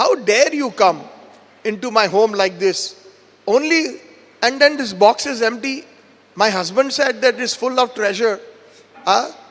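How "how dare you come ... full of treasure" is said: plain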